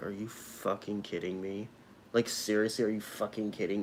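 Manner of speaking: muttered under breath. Retelling her reaction as an unmasked woman walked past, muttered under breath. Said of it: "muttered under my breath".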